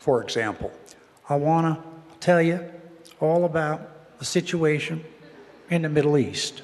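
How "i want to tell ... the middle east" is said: slow, pitched-up delivery, pause between every few words. Recreating Carter's speech rhythm: Carter impression, many pauses between words. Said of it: "He paused a lot".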